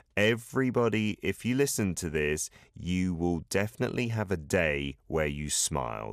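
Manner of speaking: ordinary delivery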